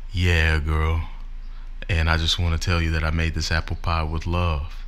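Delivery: put-on deep nineties boy-band backing voice. Playing the deep-voiced guy in a nineties boy band: put-on deep voice. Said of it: "Like the guy with the deep voice that talks in the background".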